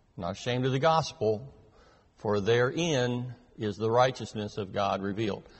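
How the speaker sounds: plain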